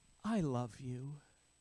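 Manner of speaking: gentle, soft, sweet, low voice. Retelling what she said while looking up at him, retelling a soft, sweet voice. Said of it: "in a soft, sweet voice".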